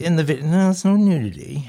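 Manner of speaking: let-down, deflated, disappointed tone. Replying to a question from a co-host, sounding disappointed. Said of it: "You sound disappointed".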